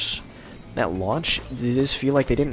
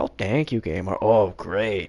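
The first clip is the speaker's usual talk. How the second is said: put-on passive-aggressive delivery in a much lower voice; 5 semitones lower than usual. Speaker recalls talking back to a game, acting out passive-aggressive thanks. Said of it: "passive aggressive annoying phase".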